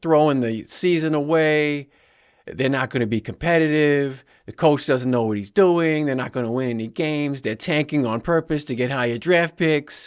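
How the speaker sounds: bad New England sports-radio Boston accent. Retelling what New England sports radio hosts said, in a terrible Boston accent. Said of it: "I know I'm doing a terrible accent".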